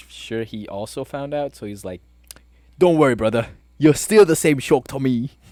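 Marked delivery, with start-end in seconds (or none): 2.8-5.3 very loud, high, terrible put-on British accent. Quoting a game character's reassuring line in the worst British accent. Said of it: "the worst British accent I can do".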